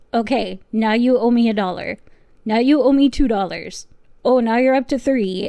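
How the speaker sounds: put-on Indian accent throughout. Retelling a witness's joke during initial questioning: imitating Doctor Chopra's Indian accent. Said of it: "by doing the accent".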